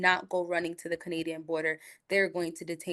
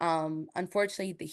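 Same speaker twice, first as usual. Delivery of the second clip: ordinary talk, nothing marked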